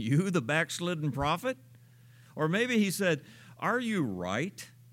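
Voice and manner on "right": stress placed on the word right. Rereading God's question to the prophet a different way: stress on 'right'. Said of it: "as opposed to being wrong".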